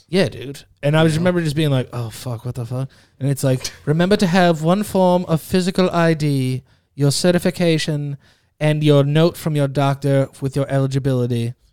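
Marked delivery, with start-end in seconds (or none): 3.8-11.5 imitated robotic computer voice. Recounting the vaccination instructions they heard, in a computer voice. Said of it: "computer voice".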